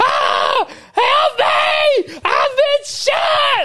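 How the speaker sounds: put-on very high, very slow, swooping, drawn-out scream. Retelling an active-shooter drill, imitating someone screaming. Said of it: "Teresa's in the back screaming".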